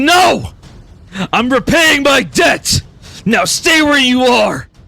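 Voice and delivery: loud, high-pitched yelling, straining to hold. Narrator voicing Bartholomew as he restrains the center, yelling. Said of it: "Bartholomew yells".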